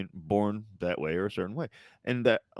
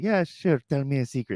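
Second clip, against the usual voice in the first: put-on woman's voice, pitched up; 6 semitones higher, 4 dB louder than usual. Retelling a woman's story, the reply to a kid, imitating a woman's voice. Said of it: "she had this really strong um".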